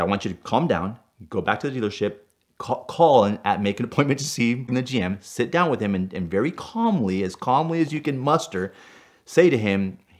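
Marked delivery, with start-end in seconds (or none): none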